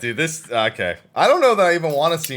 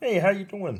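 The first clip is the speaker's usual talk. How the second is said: puppet-frog voice, higher and quieter; 8 semitones higher, 5 dB quieter than usual. Imagining a scary silent figure, Valen, suddenly speaking in a Kermit voice. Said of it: "sounding like Kermit".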